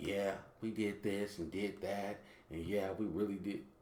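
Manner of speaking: loose, casual, unpolished, offhand way of speaking. Mocking how the president talks after hearing his address: imitating Donald Trump's casual talk. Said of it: "He talks like a, just like".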